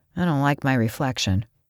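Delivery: plain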